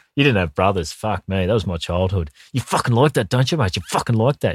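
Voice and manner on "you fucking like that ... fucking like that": acted talking through gritted teeth, higher pitch. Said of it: "Bit of gritted teeth".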